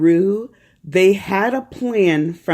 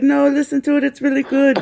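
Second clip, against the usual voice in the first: put-on terrible, muddled half-German, half-Jamaican accent, pitched up; 8 semitones higher than usual. Retelling a friend's advice to listen to a podcast: imitating Ariette's accent. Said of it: "That's my impression of you, Ariette".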